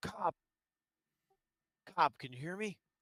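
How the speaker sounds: nonchalant aside. Sitting near him while eating, speaker nonchalantly talks under the breath. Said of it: "kind of under my breath".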